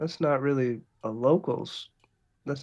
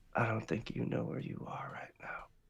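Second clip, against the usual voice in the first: frightened, hushed, fast fearful whisper; 3 semitones lower, 12 dB quieter than usual. A game master voices a man leaning in toward a player, fearful. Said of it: "there is fear in his eyes".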